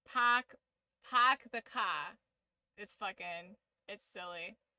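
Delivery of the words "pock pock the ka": heavy Boston accent laid on thick, r's dropped. Explaining how to get the Boston accent: Boston accent. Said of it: "That's how you get the Boston accent".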